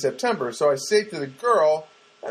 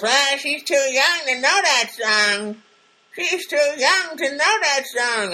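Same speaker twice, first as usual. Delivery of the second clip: put-on older woman's voice, pitched very high; 10 semitones higher, 3 dB louder than usual. Retelling a comment called out from the waiting room lobby, older woman's voice. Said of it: "comes some older woman voice".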